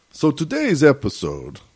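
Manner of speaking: put-on old-horror vampire voice. Asked by a co-host to introduce the episode talking like a vampire: vampire voice. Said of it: "does that sound like a vampire?".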